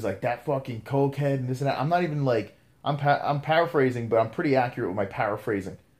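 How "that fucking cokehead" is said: mild half-yell, mock screaming tone. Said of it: "he was screaming cokehead".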